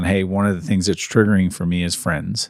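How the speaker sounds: ordinary talk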